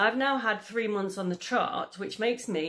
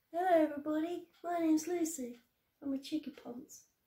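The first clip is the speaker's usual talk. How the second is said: high, little pet-dog voice; 8 semitones higher, 7 dB quieter than usual. Asking the dog to say hello, then speaking as Lucy the dog. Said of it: "say hello".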